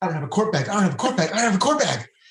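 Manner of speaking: put-on frantic panicked talk, breakneck speed, pitch climbing. At the airport before security, retelling Heather's outburst, imitating Heather's panicked rush. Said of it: "with a panic, like talking 500 miles an hour".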